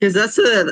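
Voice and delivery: cracked voice breaking mid-phrase. Explaining what music the family plays in the car, voice cracking. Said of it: "oh, my voice cracked".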